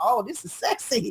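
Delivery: mock playful teasing. Retelling a kitchen moment when the partner offers to cook: imitating own teasing tone. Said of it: "I'm teasing them and messing with them".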